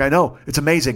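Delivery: ordinary talk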